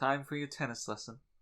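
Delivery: delicate, prissy, effete, dainty English accent. Acting out a dainty English name being called: put-on effete English voice. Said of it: "very effete, kinda dainty English name".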